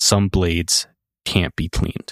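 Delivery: eerie, flat, emotionless slasher-villain monotone. Retelling a character's line from a story, imitating eerie deadpan villain voice. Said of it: "his tone is so eerie, almost like a slasher villain, devoid of emotion, deadpan".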